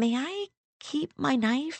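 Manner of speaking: small, meek, timid, high voice. Marnie speaks to a talking bear she had pointed a knife at, in a small voice. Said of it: "She asked in a small voice".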